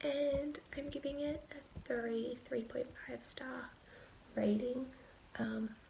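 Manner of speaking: speaking in a whisper. Late-night update, speaker whispering since everyone is in bed: whispering. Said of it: "I'm just whispering because everyone's in bed".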